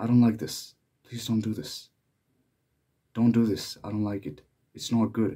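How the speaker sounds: shy, low-toned voice. Someone recalls how they used to object, imitating a shy, low tone. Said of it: "say in a shy, low tone".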